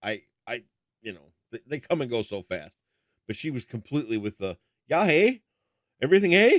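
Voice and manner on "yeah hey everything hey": put-on upper Midwest Minnesota accent, high and loud. Retelling what a minnesota nurse said: imitating a minnesota accent. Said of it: "I love that accent".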